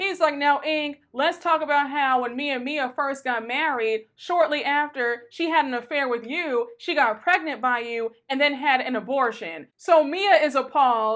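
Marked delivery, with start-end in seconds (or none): none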